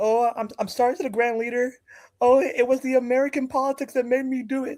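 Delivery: very high, uncontrollable, sobbing blubbering. Retelling an apology at a press conference, imitating someone crying uncontrollably. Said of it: "He was crying uncontrollably".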